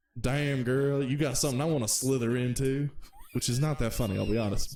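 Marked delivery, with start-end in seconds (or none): 0.2-2.9 put-on American Southern accent. Delivering a pickup line, in a Southern accent. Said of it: "I do all of my uh my pickup lines in a southern accent".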